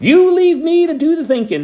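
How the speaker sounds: very high, shrill holler. Hank answers the narrator, who has just yelled at him, hollering. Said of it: "Hank hollered".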